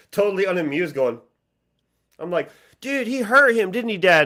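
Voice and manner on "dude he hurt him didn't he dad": put-on high, loud, excited seven-year-old voice. Retelling watching wrestling as a seven-year-old: imitating his seven-year-old self. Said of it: "as, like, a seven-year-old going".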